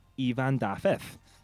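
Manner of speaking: put-on awful Welsh accent. Introducing a track by a Welsh producer, Welsh accent on the name. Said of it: "That's my Welsh accent".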